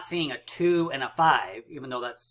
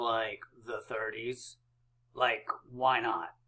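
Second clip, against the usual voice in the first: low, soft, silly put-on voice. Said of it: "I don't know why I'm talking like this".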